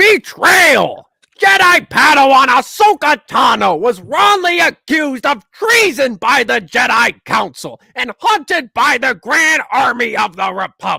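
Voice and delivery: shrill, very loud, very high-pitched bellow. Reading a plot summary aloud in Gilbert Gottfried's voice. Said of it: "I've been reading them with Gilbert Gottfried's voice".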